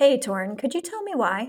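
polished, proper, grown-up voice. [name] asks Torin her line again, in her proper big girl voice. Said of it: "It's my big girl voice".

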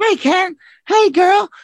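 very high, slow cartoony doll voice. Imagining how they'll talk as Barbie and Ken, cartoon doll voice. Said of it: "talk with those fucking cartoon sounds".

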